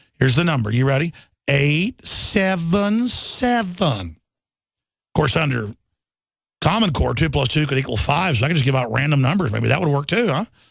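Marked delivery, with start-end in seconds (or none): 1.5-4.1 mockingly slow, digit by digit, seven drawn out. Giving a phone number to show hosts he calls dumb; mockingly slow. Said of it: "let me give it out for you real slow".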